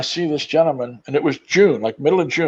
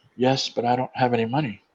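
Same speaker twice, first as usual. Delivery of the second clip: soft-spoken, gentle, very quiet voice; 6 dB quieter than usual. Retelling a hungry stranger's reply at the door: soft voice. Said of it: "he says in a real soft voice".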